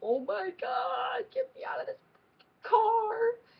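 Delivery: mock very high-pitched, thrilled, excited outburst. Retelling seeing the concert venue sign from the car, retelling geeking out. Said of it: "I literally start geeking out".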